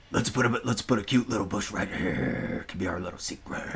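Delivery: whispered, breathy voice with tinny metallic tone. Greeting a chat name, doing Bob Ross with a metal voice. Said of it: "Bob Ross with a metal voice".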